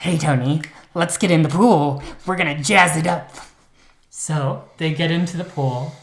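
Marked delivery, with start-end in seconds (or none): 0.0-3.3 loud, wired, jazzed-up excited voice. Retelling a true story, quoting Herb inviting Tony into the pool: Herb's voice. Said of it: "can I do that in Herb's voice?".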